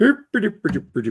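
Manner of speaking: put-on mock-Swedish cook voice. Answering a request to do the Swedish Chef from the Muppets again: Swedish Chef voice. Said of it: "do that Swiss, the Swedish chef again from the Muppets".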